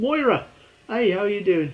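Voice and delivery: put-on British accent. Trying out how to say a name: British accent. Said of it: "like, a, a British accent".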